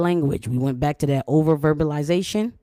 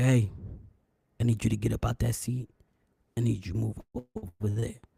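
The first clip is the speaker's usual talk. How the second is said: very soft, cool, deep, calm manly-man voice; 5 semitones lower, 9 dB quieter than usual. Imitating a manly man on TV telling someone to move: put-on calm, cool, deep voice. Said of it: "with a calm, cool, deep voice".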